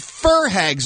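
plain

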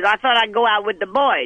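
plain

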